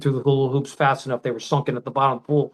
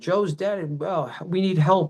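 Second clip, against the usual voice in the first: mock restrained, urgent, desperate yelling; 4 semitones higher than usual. Retelling banging on a neighbor's door for help: retelling own yelling. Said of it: "I'm yelling".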